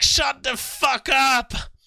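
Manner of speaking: emotional, very high, shrill yell. Describing yelling at the screen while watching someone's life, retelling a yell. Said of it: "I'm yelling at my screen".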